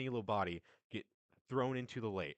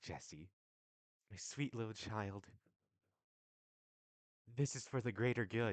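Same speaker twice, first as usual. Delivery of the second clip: put-on grown woman's voice, speaking down as to a small child. Voicing a woman who bends down to a small child. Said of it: "She kinda bends down and goes".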